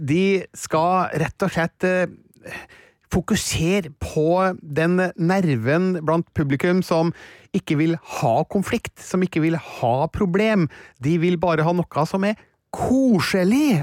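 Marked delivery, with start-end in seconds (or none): 12.7-13.8 extra weight given to the word koselig. Describing what part of the audience wants, putting stress on koselig. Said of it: "altså med trykk på koselig".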